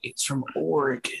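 whispered speech. Speaker retells what they said to a man back then; retelling a whisper. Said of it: "I even whispered".

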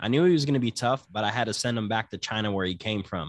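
ordinary talk

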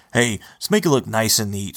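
ordinary delivery

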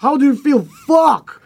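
mock, very high shrieking scream. Recalling going on stage, the speaker re-enacts screaming at the crowd: retelling own scream. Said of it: "I was screaming like "fuck!"".

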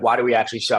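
ordinary talk

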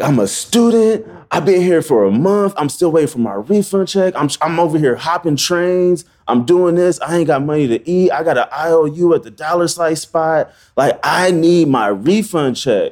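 mock crying, high, tearful and livid rant. A student retells going off at those giving the runaround, reenacting going off while crying. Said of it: "And I'm going off, snot coming out of my nose. I'm crying".

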